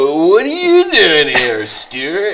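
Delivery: loud, sing-song, stretched-out, swooping California accent. Recalling a sketch about accents: Saturday Night Live California accent. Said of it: "the California".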